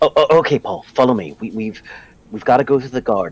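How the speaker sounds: whispering. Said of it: "I turn around and I whisper to Paul".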